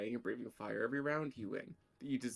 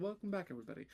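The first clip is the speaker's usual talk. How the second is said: high on-air radio announcer delivery; 8 semitones higher, 3 dB quieter than usual. Host welcoming viewers back from a break, in a radio announcer voice. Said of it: "makes me sound like a radio announcer".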